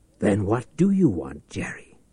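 usual speaking voice

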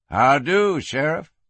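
ordinary delivery

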